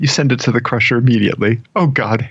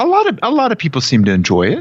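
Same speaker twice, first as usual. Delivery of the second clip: swooping, sing-song Minnesota accent, pitched up; 8 semitones higher than usual. Coaching someone on faking having seen a film, in a Fargo Minnesota accent. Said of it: "Fargo voice".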